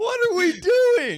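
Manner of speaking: very high-pitched yelling. Reacting to Aemond's training scene, yelling. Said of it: "Sorry for yelling".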